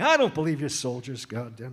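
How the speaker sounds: booming, very loud, wildly animated, swooping blustery bellow. Retelling a castmate's backstage impression of the director: imitating Matthew imitating Gene Saks. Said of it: "Matthew would walk around backstage before the show saying".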